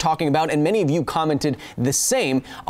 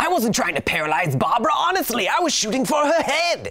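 put-on comic-book villain voice, pitched up; 7 semitones higher than usual. On a channel, attempting the hardest impression, a Batman villain impression. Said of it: "if you can do an impression of this character".

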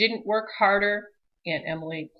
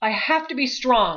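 gasped out, higher pitch; 2 semitones higher than usual. Clinging to a speeding truck's bumper, Henrietta gasps to herself. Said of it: "she gasped".

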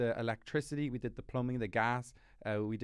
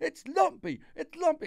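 very high, stretched-out, drawn-out screaming; 7 dB louder than usual. Retelling a chaotic morning laying the floor: imitating Anna screaming. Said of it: "Anna was screaming, like".

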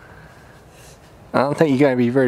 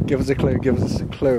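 plain

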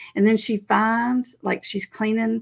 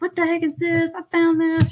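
mock, high, frantic outburst of someone losing it; 9 semitones higher than usual. Retelling how she confronted him over the phone, imitating someone losing it. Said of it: "She's like losing it".

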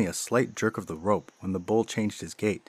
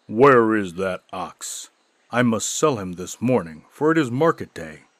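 rough, gruff, raised voice; 5 dB louder than usual. Narrator reads the big butcher, just home, asking his wife, gruff voice. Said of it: "asking his wife in a gruff tone of voice".

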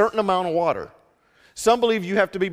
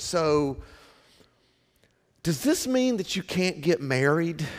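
sheepish, embarrassed, abashed, self-conscious; 2 semitones lower, 4 dB quieter than usual. Speaker retells a classmate's question to them, imitating a sheepish question. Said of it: "asked me sheepishly one time, almost kind of embarrassed".

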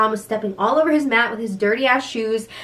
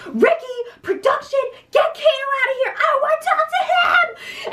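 mock very high, shrill, screaming yelling. Retelling how she screamed at production to get a man out, acting out her yelling. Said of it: "And she's like yelling this".

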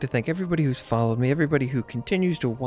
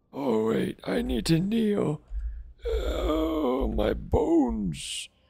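put-on crotchety old man voice, much higher; 10 semitones higher than usual. Game character about to kneel to retrieve a memory, in a crotchety old man voice. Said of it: "I am an old man. I'm very old crotchety man here".

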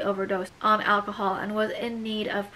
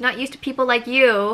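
loud shout with a hint of amusement; 3 semitones higher, 8 dB louder than usual. Narrator reading Teal calling out to Vance, shouting with a hint of smile. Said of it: "Teal shouted with a hint of a smile in her voice".

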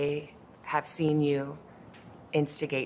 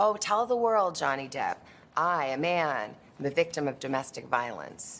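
normal talking voice

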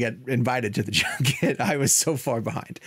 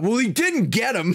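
put-on, very high-pitched, shouted blurt; 9 semitones higher, 3 dB louder than usual. Recalling reacting to a friend's photo, retelling own shout. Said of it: "And I immediately shouted out".

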